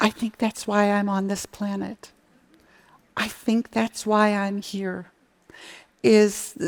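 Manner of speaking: voice catching, choked up, close to tears. Answering why they do this work, after another speaker's answer: on the verge of tears. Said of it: "and now I'm gonna cry".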